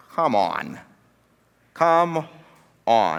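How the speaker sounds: scoffing. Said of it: "anyone with a right or sound mind would be like".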